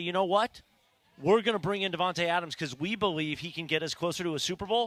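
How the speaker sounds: ordinary talk, nothing marked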